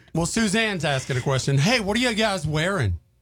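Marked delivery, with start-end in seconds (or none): 1.6-3.0 put-on, sunny, bright, friendly, cheery voice. Reading out a question someone asked, cheery. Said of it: "The way you said it first was like cheery".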